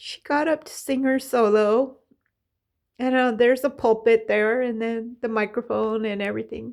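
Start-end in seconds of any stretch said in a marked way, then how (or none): 0.0-2.0 voice getting emotional, high, emotion rising. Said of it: "I'm getting emotional".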